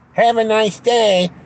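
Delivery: very loud, very high, slow, drawn-out yell. Retelling what the garage staff called out: imitating people yelling. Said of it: "They start yelling at me from the garage".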